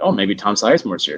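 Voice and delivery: normal talking voice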